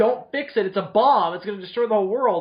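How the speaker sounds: acted-out, high-pitched yelling. Describing a scene, the speaker acts out a character yelling at the mutants: retelling a yell. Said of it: "he's yelling at them like".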